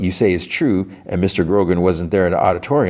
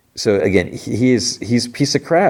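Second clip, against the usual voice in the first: ordinary delivery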